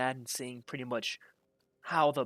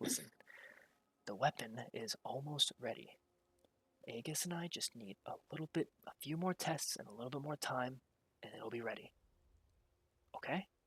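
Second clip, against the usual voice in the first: very soft, quiet, secretive hushed voice; 9 dB quieter than usual. A narrator relays a man answering an unknown voice the listeners overhear: hushed voice. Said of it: "still hushed voice".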